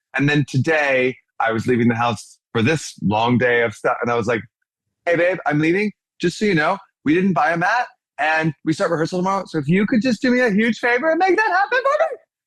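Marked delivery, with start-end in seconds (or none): 5.1-12.2 animated voice, pitch climbing higher and higher. Retelling what she said to her husband while leaving the house, voice rising higher. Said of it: "my voice got higher and higher".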